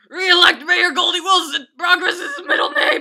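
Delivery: shrill yell, very high, very loud, rising. Giving the re-elect campaign line for real: yelled. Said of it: "I'll just yell it".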